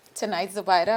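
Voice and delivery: ordinary talk, nothing marked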